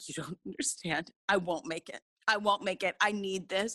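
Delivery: put-on desperate, pleading, begging tone. Retelling how she begged Clint for an epidural, retelling desperate begging. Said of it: "begging Clint for an epidural".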